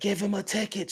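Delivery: put-on shrill, livid scream at top of lungs. Retelling a video of a ticketed young lady: imitating a woman screaming furiously. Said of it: "screaming at the top of her lungs".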